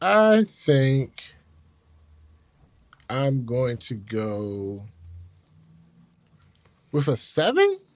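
rising, questioning upward inflection, voice lifting. Giving the year a rating out of ten: upward inflection. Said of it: "with an upward inflection".

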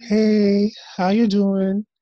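slow, drawn-out, high, loud, reluctant. Imitating a meme of people walking into a room: imitating the Little Women Atlanta meme. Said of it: "meme from Little Women Atlanta when they walk in".

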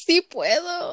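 tearful, high-pitched voice, crying through tears. Retelling a reply to bullies on the monkey bars: imitating her own crying retort. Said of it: "And then I started crying".

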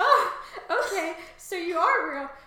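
high, loud, bewildered laughing disbelief. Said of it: "I'd be like".

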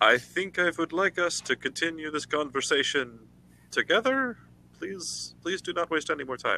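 polite, high call from the background. A player's character calls out from the background during an interaction, calling out quietly. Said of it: "calling out quietly from the background".

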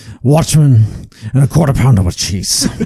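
put-on gruff, older-sounding Scottish voice. Reading a list of show titles on request: Brian Cox voice. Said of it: "My Brian Cox voice?".

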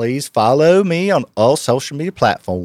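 Alabama-style Southern US accent. Asked to show a Southern accent, the speaker performs a sample line in it. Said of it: "show me your Southern accent?".

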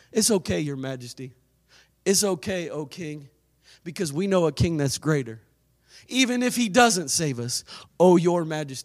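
sarcastic mock deference, low and soft.

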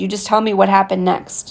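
usual speaking voice

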